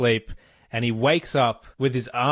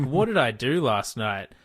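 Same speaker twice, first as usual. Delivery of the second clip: mock angry, raging outburst. Acting out a panicked morning-after thought: mock rage. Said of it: "the rage that comes the next morning where you're like".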